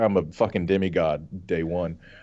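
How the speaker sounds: plain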